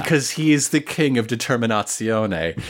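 ordinary delivery

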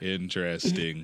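mock bored, uninterested West Indian accent. Repeating one word like a relative who does not want to listen: imitating an uninterested west indian uncle. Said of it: "like a uninterested West Indian uncle".

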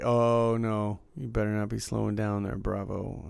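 usual speaking voice

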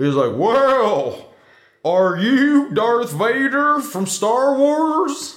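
high, very slow talking-horse voice, sounding mouth-full. Retelling a cop questioning Darth Vader, the speaker is talking like Mr. Ed. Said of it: "He's like talking like Mr. Ed".

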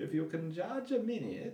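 high, thick, fake German accent. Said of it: "this Freudian character come on with a thick German accent and say".

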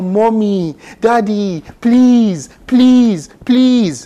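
high, drawn-out, wailing, pleading cry. Retelling how a man in a hospital reacted on seeing a syringe: imitating him crying out. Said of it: "He's crying out".

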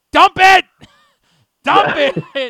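shrill, full-volume, very high, drawn-out scream. Speaker recounting screaming during a bit on a show, retelling a scream. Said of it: "and then I started screaming".

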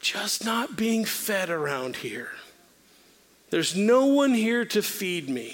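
play-acted feeble, weak, frail voice. Retelling his reply when she asked what was happening, putting on a weak, frail voice. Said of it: "in my weak and my frail voice".

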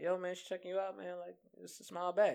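high, easygoing, laid-back buddy voice.

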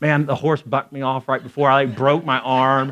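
usual speaking voice

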